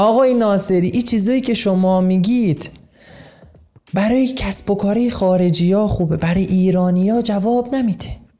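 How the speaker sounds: put-on Persian spoken with a Shirazi accent. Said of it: "حالا با لهجه شیرازی".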